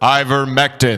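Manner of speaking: dramatic, deep voice with echo-chamber reverb. Told the drug's name should be said with reverb, saying it with reverb. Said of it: "supposed to say it with reverb".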